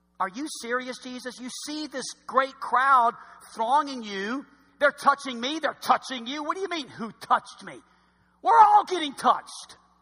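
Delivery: mocking, incredulous, sarcastic, scoffing tone. Acting out the disciples answering Jesus: imitating sarcastic disciples. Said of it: "the disciples get sarcastic".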